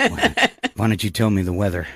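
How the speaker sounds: mock seductive tone. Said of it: "talking sexy to Alexa".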